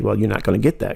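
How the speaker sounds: ordinary talk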